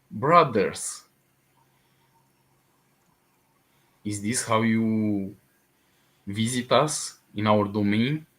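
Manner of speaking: low, stable, steady voice. Narrator voices what the players hear in their minds, in a low, stable voice. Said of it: "A low, a, a stable voice".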